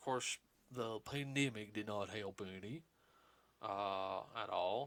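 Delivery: cartoon dog voice. Talking with everybody about the pandemic's effect, in a Goofy voice. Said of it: "That wasn't a bad Goofy impression".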